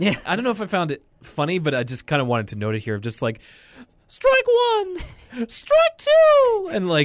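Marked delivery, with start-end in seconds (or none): 4.1-6.7 very high-pitched, very loud, very slow and drawn out. Mimicking the calls of the catcher for Mighty Mountain, in a high-pitched voice. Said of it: "has a high-pitched voice".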